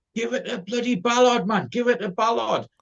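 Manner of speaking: mock shout, pitched way up. Recounting what he shouted from his seat at the match, retelling a shout. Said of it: "I'm shouting from my seat".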